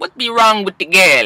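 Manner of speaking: botched, clumsy, fake Jamaican accent. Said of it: "That's my fucked up Jamaican accent".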